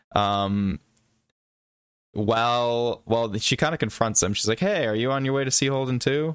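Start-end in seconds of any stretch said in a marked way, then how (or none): 4.6-6.3 bright, sunny, cheerful and upbeat voice. Retelling how a character confronted someone: imitating a cheerful greeting. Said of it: "In, like, a cheerful manner".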